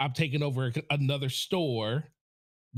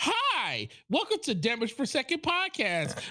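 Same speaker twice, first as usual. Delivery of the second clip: very high, swooping, sing-song podcast-host voice; 12 semitones higher than usual. Showing the co-host how their podcast intro sounded, mocking the co-host's host voice. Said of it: "it was like you were doing this".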